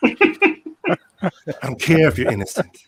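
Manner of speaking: very slow, loud, swooping, drawn-out delivery. Answering a request to say the line: Tommy Lee Jones voice. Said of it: "in your best Tommy Lee Jones voice".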